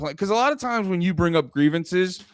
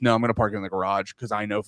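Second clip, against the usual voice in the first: mock, offhand, no-nonsense, very matter-of-fact tone; 9 semitones lower than usual. Retelling what a runner said about parking the truck: imitating a matter-of-fact reply. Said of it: "my runner just very matter-of-factly goes".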